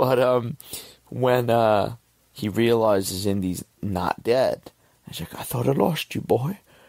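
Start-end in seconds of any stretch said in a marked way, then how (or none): 5.3-6.6 choked-up, pitched-up voice breaking with emotion. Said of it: "I'm gonna get choked up and start crying".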